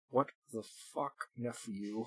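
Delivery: muttered through clenched teeth. An uncle at a banquet table mutters to his nephew, muttered through clenched teeth. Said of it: "almost inaudibly through clenched teeth".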